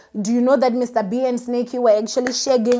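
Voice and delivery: ordinary talk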